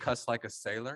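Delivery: ordinary talk, nothing marked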